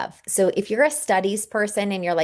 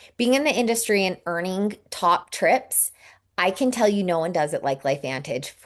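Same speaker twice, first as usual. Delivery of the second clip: usual speaking voice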